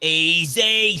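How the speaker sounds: high, hammy, over-the-top Cockney drawl. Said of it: "goes over the top with that Cockney accent".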